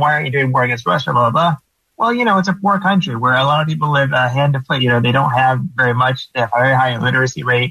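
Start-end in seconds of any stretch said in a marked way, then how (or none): none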